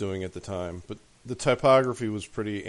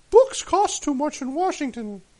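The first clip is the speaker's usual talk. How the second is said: very high, loud, exaggerated, squeezed-up falsetto; 5 dB louder than usual. Recalling a bookstore commercial's opening line, Robert Haft falsetto impression. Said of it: "I'm exaggerating a little bit in that falsetto".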